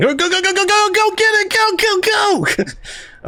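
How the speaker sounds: acted panicked urgency, very high, drawn out. Describing a favorite scene where Jake is caught on the phone, imitating Jake panicking. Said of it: "And Jake's panicking".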